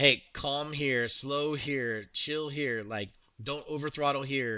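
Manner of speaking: gentle, calm, soothing, close-to-ear coaching voice. Recounting how he coached the speaker in the ear, imitating a soothing voice. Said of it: "very much just soothing to like".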